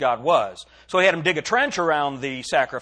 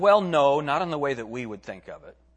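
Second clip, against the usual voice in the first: ordinary delivery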